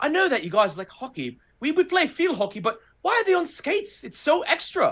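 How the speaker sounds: terrible put-on British accent, pitched very high. Retelling a UK guy's question from a tour in Spain, in a terrible British accent. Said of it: "British accent terrible".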